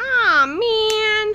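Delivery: very high cartoon groan with man stretched out. Recapping a TV episode, voicing Archie's reaction as a Swiper impression. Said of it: "That's my swiper no swiping impression".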